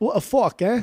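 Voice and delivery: awful put-on British accent. Joking around at the end of an episode, doing an awful british impression. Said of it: "that was an awful British impression".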